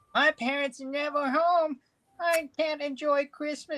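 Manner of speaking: put-on very high, upset child's complaining voice. Retelling a special's plot, imitating a kid upset about Christmas: Emmanuel Lewis voice. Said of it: "he's got an Emmanuel Lewis voice. I can't quite do it".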